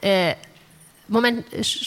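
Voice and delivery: plain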